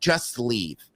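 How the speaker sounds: play-acted sassy, dismissive shop-worker voice. Retelling what a store worker said to him: imitating a sassy clerk. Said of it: "the sassy guy comes out".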